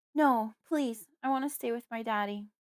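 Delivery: frantic, panicked, shrill, high-pitched. When someone mentions the hospital, the narrator speaks up in a panicked, shrill voice. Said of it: "I speak up in a panicked, shrill voice".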